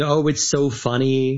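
normal talking voice

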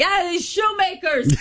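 high-pitched, slow, mock yelling voice.

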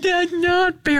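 very high, weepy crying voice. Retelling a game that Noah lost, imitating Noah crying. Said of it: "Noah just started crying like".

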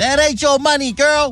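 shouting. A radio host weighing in on air, yelling. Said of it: "Why are you yelling?".

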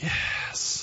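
weak whispered voice.

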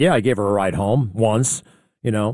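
ordinary talk, nothing marked

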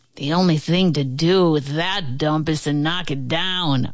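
contemptuous, dismissive, scornful sneer. A man who has come to see the old house, sneering. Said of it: "a man sneered".

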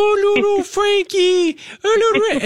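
very high, slow cutesy voice. A parent imitates their kid talking to the family puppy in a very high voice. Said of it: "talking to our puppy in a very high voice".

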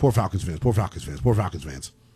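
quick tongue-twister style, repeated three times fast.

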